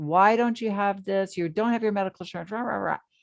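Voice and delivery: put-on yelling, berating, scolding tirade. Speaker retells a mother yelling at her husband after he fell, imitating someone yelling. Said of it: "she just started yelling at him".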